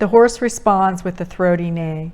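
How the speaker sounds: plain reading voice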